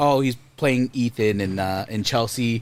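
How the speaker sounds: usual speaking voice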